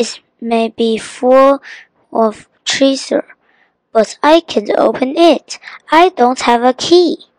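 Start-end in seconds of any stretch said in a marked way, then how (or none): none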